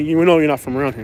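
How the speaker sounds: usual speaking voice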